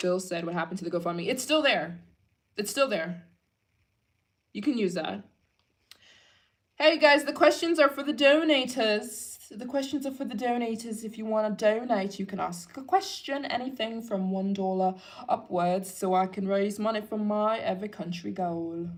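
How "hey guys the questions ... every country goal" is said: put-on British accent. Addressing the audience about donations, in a put-on British accent. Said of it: "don't I have a good British accent?".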